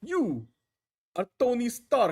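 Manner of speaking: very high, slow, drawn-out put-on Russian accent. Retelling what he said in his Red Guardian voice: Red Guardian Russian accent. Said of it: "Like I'm trying to do his Russian accent".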